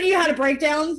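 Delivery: ordinary delivery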